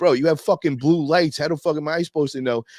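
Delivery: high, furious, angry yell. Recounting yelling at the people who ran up with guns drawn, retelling a yell. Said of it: "I'm yelling at them like".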